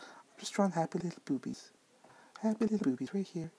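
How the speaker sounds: hushed, high-pitched ASMR-style voice. Drawing on stream and talking like an ASMR video: Bob Ross voice. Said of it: "like I'm Bob Ross".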